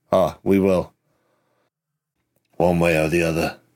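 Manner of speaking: said under one's breath. Replying to someone who hopes they find her, muttered under breath. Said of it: "I say under my breath".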